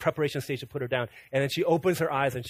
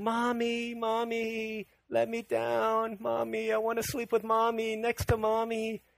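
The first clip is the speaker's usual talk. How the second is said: put-on play-acted, high, drawn-out sobbing toddler voice; 8 semitones higher than usual. Retelling a toddler's cries at bedtime: imitating a crying toddler. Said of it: "she's crying out".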